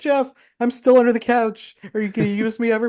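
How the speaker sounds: tiny, very high, mournful machine voice. Voicing an imagined AI treadmill talking to Jeff, in a sad little treadmill voice. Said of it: "have a sad little voice".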